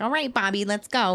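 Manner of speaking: put-on nasal voice. Imitating a cartoon mom calling her son: imitating Bobby's mom, really nasally. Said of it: "really nasally".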